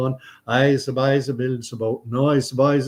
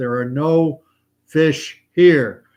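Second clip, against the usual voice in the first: mock, loud, slow, drawn-out booming voice; 5 dB louder than usual. Telling a joke, voicing what the voice says to a man drilling ice: loud booming voice. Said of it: "the loud booming voice says".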